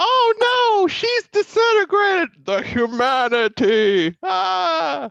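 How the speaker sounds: very high, slow, stricken panicked wail with stretched "ah". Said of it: "I'm doing every voice I could possibly think of".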